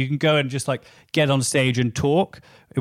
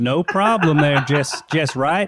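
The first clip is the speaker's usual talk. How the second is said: put-on Texas Southern accent. Asked to show off accents, the speaker demonstrates a texan accent. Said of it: "I can do a Texan accent".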